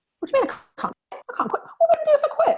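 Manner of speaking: exaggerated, very high, loud, rapid-fire rattled-off chatter. Recalling her replies to a man who urged her to quit her job, imitating own fast talk. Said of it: "I always talk really fast".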